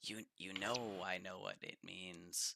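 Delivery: whisper under breath. Game master voices a character recognizing the shown coin, whispering under his breath. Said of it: "kind of whisper under his breath".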